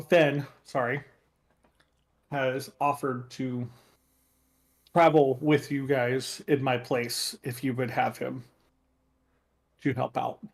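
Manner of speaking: ordinary delivery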